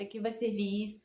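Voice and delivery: normal talking voice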